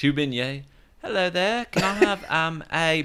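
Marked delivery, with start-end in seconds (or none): 1.0-3.0 slow, high-pitched put-on London accent. Trying a London accent after being dared to: put-on London accent. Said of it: "Try it now".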